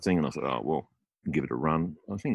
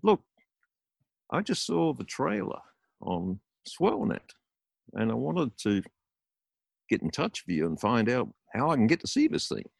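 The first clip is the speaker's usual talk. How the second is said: stretched-out, pitched-up American drawl; 6 semitones higher than usual. Retelling a phone call from Jack, a filmmaker, imitating Jack's American drawl. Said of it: "This American drawl".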